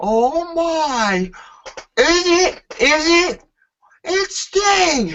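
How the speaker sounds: very high, very slow, drawn-out ringside announcer call. Retelling what a commentator says at an entrance: Michael Cole impression. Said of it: "hear Michael Cole go".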